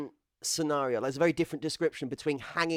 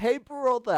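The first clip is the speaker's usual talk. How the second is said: mock yell at the top of the voice, high; 8 semitones higher, 4 dB louder than usual. Speaker recounts shouting at another player in voice chat, retelling a shout at top of voice. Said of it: "I shouted that in VoIP at the top of my voice".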